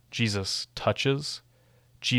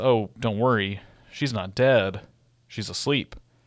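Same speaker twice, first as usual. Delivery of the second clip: play-acted, sly, sardonic, knowing sarcastic tone. Retelling a scripture scene, the speaker quotes his reply with a sly, sarcastic retelling. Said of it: "I kind of read it with some sarcasm, or it's kind of sly".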